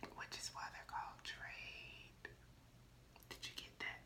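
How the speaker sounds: slow, unvoiced whisper. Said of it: "Why are you whispering?".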